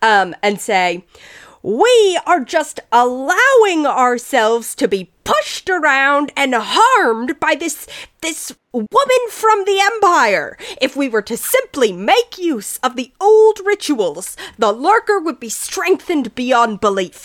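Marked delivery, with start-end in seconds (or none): 1.6-17.3 raised, louder, higher voice. Voicing Hargoth in an argument with a woman: raised voice. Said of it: "you hear Hargoth raise his voice".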